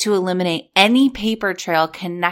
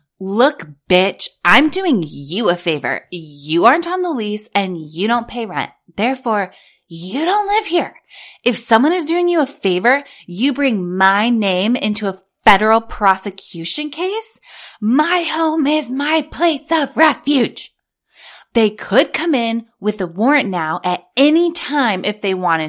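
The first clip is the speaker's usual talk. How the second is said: mock hostile, aggressive, angry reading; 4 semitones higher, 4 dB louder than usual. Reading aloud Jen's written message to Stuart, mock-aggressive as Jen. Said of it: "I have to read this in her, like, aggression".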